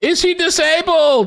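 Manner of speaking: high, slow, loud yell. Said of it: "some reporter just straight out yelled out".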